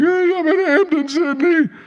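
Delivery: drawn-out, very high, slow weeping voice. Retelling a late-night call to a buddy after driving through the gates: retelling own crying. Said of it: "And I'm crying at middle of the day".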